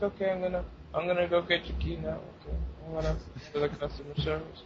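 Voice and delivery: low, hushed, bored monotone drone, barely audible. Retelling a key pickup, mimicking the man who helped: imitating someone bored, low voice. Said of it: "he sounded so boring too. Like, okay, he had a really low voice".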